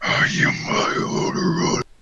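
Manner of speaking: dark guttural voice. Voicing a druid who rises up to face an enemy: dark guttural voice. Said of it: "you hear this dark, like, guttural".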